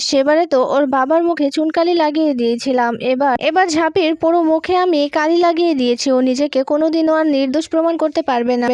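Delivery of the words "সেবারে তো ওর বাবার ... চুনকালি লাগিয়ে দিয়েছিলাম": ordinary delivery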